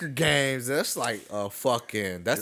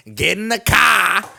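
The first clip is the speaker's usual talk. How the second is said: very loud, high put-on Boston accent, yelling; 8 semitones higher, 11 dB louder than usual. Speaker retells what he said while talking trash at the game, mock Boston accent. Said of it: "in my fucking Boston accent".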